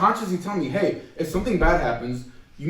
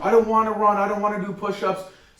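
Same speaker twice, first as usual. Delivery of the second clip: mock griping, reluctant protesting tone; 3 semitones higher than usual. Retelling what students said in gym class: imitating complaining students. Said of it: "he hated complainers".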